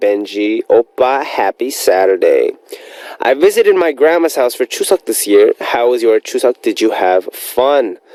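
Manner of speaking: ordinary talk, nothing marked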